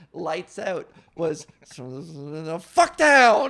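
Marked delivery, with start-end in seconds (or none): 1.7-3.5 imitated muttering under the breath. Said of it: "mutter under his breath".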